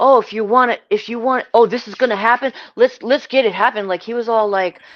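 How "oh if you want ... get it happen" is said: put-on, loud, eager, up-for-a-fight egging tone. Retelling how a grown man reacted: imitating Jimmy eager to fight. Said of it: "down to fight or something".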